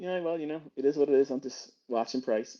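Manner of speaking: mock unbothered, unemotional, calm, unfazed tone. Imitating a live streamer who never gets emotional: imitating unfazed Matt Miller. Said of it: "This guy looks so unfazed".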